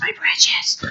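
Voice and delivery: breathy, close, whispered creature voice. Warning against clinging to money, imitating Gollum: Gollum voice. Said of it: "remember Gollum from Lord of the Rings?".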